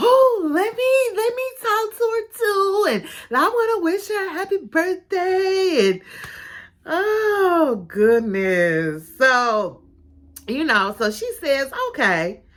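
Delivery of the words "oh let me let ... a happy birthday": play-acted, very high voice bursting with excitement. Retelling a scene where Jacob asks to join a call: imitating Jacob excited. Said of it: "he gets all excited about all things".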